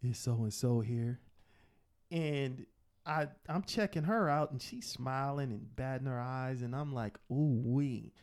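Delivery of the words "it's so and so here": put-on deep voice. Retelling coming into a store, the speaker puts on a deep voice. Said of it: "I put my deep voice on".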